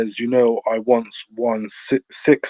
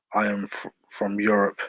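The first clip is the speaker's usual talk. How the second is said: acted cold, flat tone, much quieter; 6 dB quieter than usual. Retelling a woman's answer to a friendly question: retelling a cold reply. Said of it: "answered very coldly".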